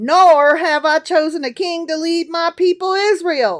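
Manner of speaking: really fake Southern accent, televangelist preacher style. Reading aloud what God says in a scripture passage, in a really fake Southern accent. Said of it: "all of a sudden you have like a really fake Southern accent".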